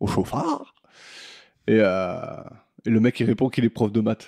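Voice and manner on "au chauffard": put-on very high voice, scornful, contemptuous, baffled disbelief. Retelling what a woman said to a driver, mock-scornful, baffled tone. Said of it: "elle le dit sur un ton genre de quoi il me parle ce con quoi".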